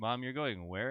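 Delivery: ordinary delivery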